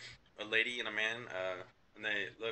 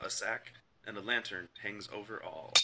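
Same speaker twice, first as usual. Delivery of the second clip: ordinary delivery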